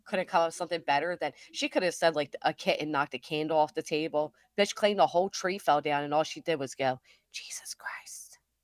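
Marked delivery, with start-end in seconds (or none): 7.3-8.3 put-on muttered whisper under breath, much quieter. Retelling what a woman said about a tree falling down, retelling a whisper under breath. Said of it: "Whispering under her breath".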